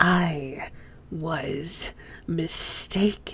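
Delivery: soft hissing through gritted, clenched teeth. Narrator voices a character's next words: hissed through clenched teeth. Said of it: "hisses his next words across clenched teeth".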